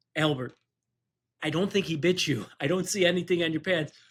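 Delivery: normal talking voice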